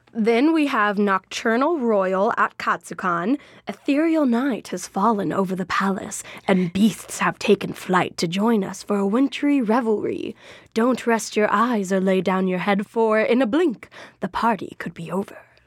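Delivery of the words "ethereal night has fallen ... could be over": eerie, spooky, sultry put-on narrator voice. Announcing an event on the schedule, reading its description in a spooky voice. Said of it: "I like pulling out my spooky voice".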